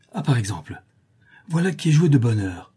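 happy, joyful, delighted cry. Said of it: "dit-il tout joyeux".

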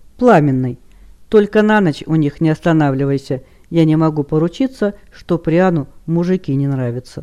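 ordinary delivery

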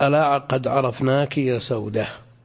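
plain

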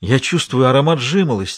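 ordinary delivery

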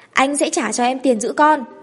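commanding, authoritative tone. A man answers a woman about looking after the child, like giving an order. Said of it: "đã bắt đầu giống như ra lệnh".

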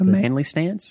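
cracking voice. Guessing the name of a standing stance, voice cracking. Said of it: "As my voice cracks as I say that".

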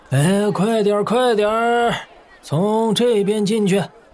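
weak, lifeless half-shout. Fanning himself, a man urges others to go in this way; feeble, listless call. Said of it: "有气无力地喊道".

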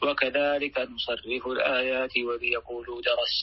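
normal talking voice

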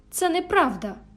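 worked-up, agitated outcry, pitched high. A man, told by a maid that his lady has fled, rises: agitated outcry. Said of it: "скричав Едгар Лінтон".

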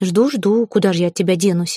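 ordinary delivery

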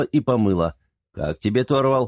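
ordinary delivery, nothing marked

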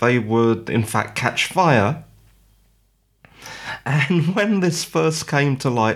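speaking while breaking into laughter through the words. Telling a news story, the speaker is laughing while talking. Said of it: "sorry if I'm laughing".

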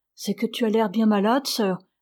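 plain reading voice

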